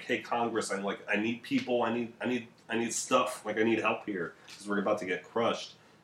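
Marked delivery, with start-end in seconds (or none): none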